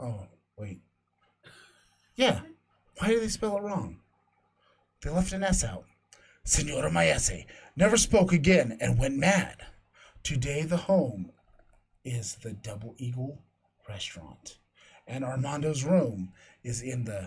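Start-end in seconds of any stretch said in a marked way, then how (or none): 6.5-17.0 eerie, spooky, suspenseful delivery. Reading a ghost story aloud to listeners, reading to scare listeners. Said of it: "you're trying to scare us".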